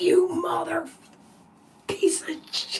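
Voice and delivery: furious, angry cursing outburst, cut off. Retelling own reaction while playing Mario: imitating own angry outburst. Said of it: "I get that upset".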